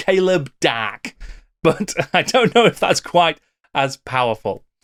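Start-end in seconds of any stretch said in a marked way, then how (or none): 0.0-1.1 light northern English accent on one word. Trying out how to pronounce a comic character's name: northern accent. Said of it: "put a bit of a northern accent on it".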